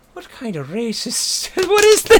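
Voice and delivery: imitated Irish accent. Retelling how an Irish stage manager reacted to a commercial: Irish accent. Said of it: "he's Irish".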